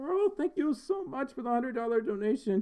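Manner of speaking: very high voice, breaking and cracking. Thanking a supporter for a hundred-dollar donation, voice cracking. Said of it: "My voice is cracking a lot right now".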